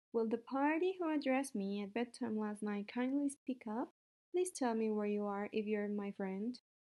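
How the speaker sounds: plain reading voice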